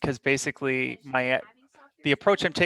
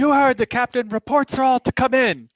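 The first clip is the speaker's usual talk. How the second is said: very high, forceful, commanding yell; 9 semitones higher, 7 dB louder than usual. Playing the ship's officer relaying the captain's order: commanding, forceful yell. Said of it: "yell out in a commanding and forceful voice".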